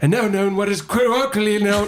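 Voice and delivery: high, hurried, put-on British English accent. Asked to say a phrase in a British accent, British accent. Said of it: "saying it in a British accent".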